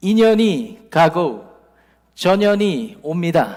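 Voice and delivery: slow, loud, drawn-out Korean with a foreign accent.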